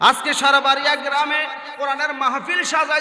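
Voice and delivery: loud, high-pitched, rousing sermon-style rallying shout.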